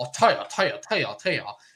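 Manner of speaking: fake, overdone Southern accent. Mocking a disliked film detective's accent: Benoit Blanc Southern accent. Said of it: "that Southern fried".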